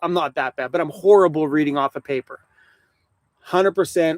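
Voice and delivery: ordinary talk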